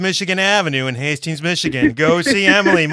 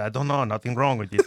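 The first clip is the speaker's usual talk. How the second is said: put-on Armenian accent, lower and quieter; 7 semitones lower, 8 dB quieter than usual. Retelling what the mechanic said about the car: imitating Kim. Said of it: "a great impersonation of Kim".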